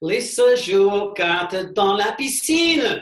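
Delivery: slow, loud, high, carefully modeled French.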